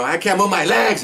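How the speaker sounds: shrieked cry, very high-pitched. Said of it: "so he's screaming at us".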